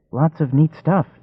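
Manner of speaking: gentle, light, high little voice. The kid answers the narrator's greeting, in a soft, high voice. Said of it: "came the soft, high voice".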